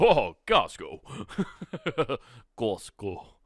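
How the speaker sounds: strangest made-up, weird, silly voice. Explaining a trick for remembering chores, the speaker demonstrates: saying costco in weird voices. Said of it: "saying Costco in the weirdest voices".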